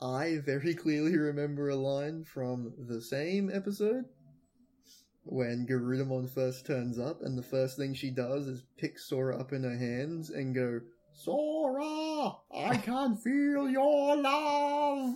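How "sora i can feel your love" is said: very high, slow bird squawk, dragging the word out. Recalling a line from an episode, the speaker quotes Garudamon: squawking Garudamon voice. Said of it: "while squawking like a bird".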